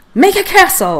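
firm, authoritative high voice. The narrator tries the wand after Peter's suggestion, commanding. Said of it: "I commanded".

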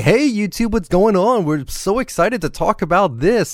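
put-on excited, cheerful voice. Showing the channel greeting that would only be faked: fake excited YouTuber voice. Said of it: "put on a fake voice and say".

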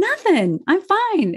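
forced, fake cheerful, bright voice pitched way up. Retelling answering a worried daughter: imitating own fake cheerful reply. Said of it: "I put on my big smile and I said".

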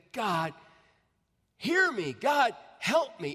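each word drawn out. Retelling a story of a minister praying at the altar: imitating someone crying out. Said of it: "he cried out".

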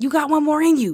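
high, encouraging, half-yelled pep tone. The speaker warns listeners about their style and shows it: kind of yelling. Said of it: "kind of yelling".

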